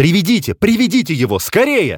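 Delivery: very high, agitated, urgent pleading voice.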